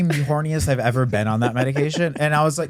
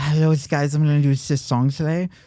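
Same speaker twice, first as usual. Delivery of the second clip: put-on lisping voice. Retelling an old online character video: put-on lisp. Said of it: "I would put on a lisp".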